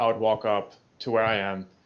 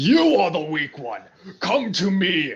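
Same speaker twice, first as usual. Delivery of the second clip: high, swooping, full-force scream; 8 semitones higher, 4 dB louder than usual. A player's character points a sword at the big one, screaming a challenge. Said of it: "basically scream out".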